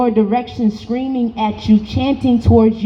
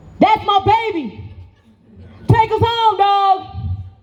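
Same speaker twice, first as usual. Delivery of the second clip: slow, high, booming voice; 9 semitones higher than usual. Recalling a voice calling out to him from the crowd, in a booming voice. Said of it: "this booming voice break through a crowd".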